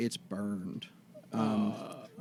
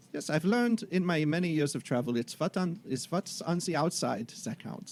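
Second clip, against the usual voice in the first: terrible put-on German accent, high-pitched; 5 semitones higher than usual. Playing a character in a group roleplay, in a terrible German accent. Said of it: "this terrible German accent".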